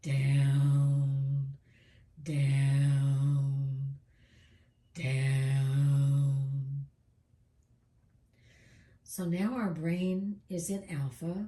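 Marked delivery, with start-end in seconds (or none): 0.0-6.8 deep, loud voice stretching out each "down". Counting down to bring the brain into alpha: deeper voice. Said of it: "saying the down, down, down in a deeper voice".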